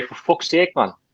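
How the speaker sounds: put-on English accent. Showing how an english guy would say it, in a mock english accent. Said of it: "Like an English guy, Steve would say".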